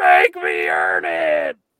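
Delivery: play-acted very low, deep, dragged-out scream. Retelling how a man held back by people reacted, the speaker imitates someone screaming. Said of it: "He just started screaming".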